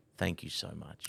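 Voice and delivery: soft whisper spoken very close up. Retelling what a man said after a hug: imitating a whisper. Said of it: "in my ear, he whispered".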